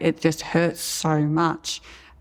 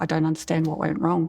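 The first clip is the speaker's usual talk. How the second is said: put-on tearful, crying delivery. Retelling how the surgeon, crying too, spoke: imitating George crying. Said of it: "he's crying as well, going".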